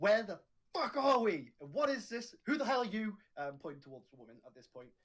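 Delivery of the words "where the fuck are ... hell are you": enraged yell at full force, high and loud. Demanding answers in character from a woman: angry shout as loud as possible. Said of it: "I just shout as loud as possible".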